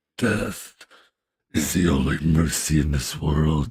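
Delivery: very deep, rough, slow growly voice. Checking whether they can still do that voice: rough, growly character voice. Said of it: "Let's see if I can still do that voice".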